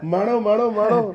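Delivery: rising, coaxing call, "maano maano".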